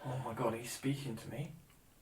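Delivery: startled, scared, disbelieving, surprised blurt. Imitating a stranger greeted in the street: imitating a scared, surprised stranger. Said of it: "Scared and surprised".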